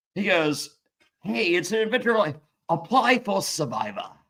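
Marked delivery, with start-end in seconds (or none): 1.3-4.1 put-on British accent. Retelling the invitation to play Survivor before the commercial break, as Jeff doing a British accent. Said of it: "in a British accent".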